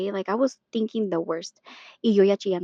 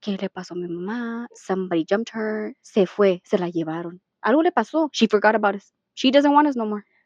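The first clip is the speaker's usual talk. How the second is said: normal talking voice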